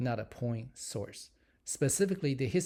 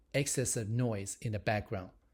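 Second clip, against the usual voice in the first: plain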